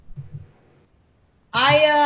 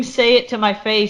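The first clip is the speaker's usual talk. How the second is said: usual speaking voice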